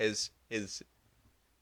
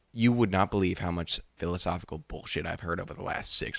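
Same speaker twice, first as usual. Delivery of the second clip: normal talking voice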